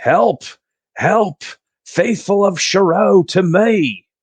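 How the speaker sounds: very high, shouted yelling. Playing a character cradling an unconscious nurse, calling the faithful: yelling for help.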